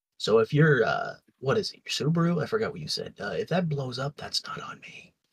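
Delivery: hushed, voiced stage whisper. Warning another speaker about a bomb on a call: half-whispering. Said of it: "Why are we whispering?".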